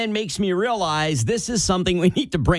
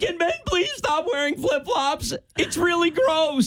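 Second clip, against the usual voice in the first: acted, very high, fast sobbing through tears; 11 semitones higher, 4 dB quieter than usual. Retelling a woman's tearful video, the speaker imitates her crying through tears. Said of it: "Through her tears".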